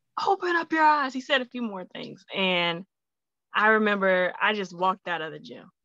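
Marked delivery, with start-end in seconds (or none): 0.3-1.1 mock scream, higher pitched. Retelling a classmate screaming at the speaker in gym class: imitating a classmate screaming. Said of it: "he screams at me".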